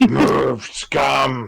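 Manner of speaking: throaty, gruff, creaky guttural voice, drawn-out scum. Showing how they would order the prisoners around: guttural voice. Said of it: "But make it sound guttural".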